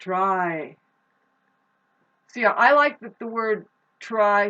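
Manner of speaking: hollering yell with "try" drawn out. Speaking to listeners, yelling. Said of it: "sorry I'm yelling".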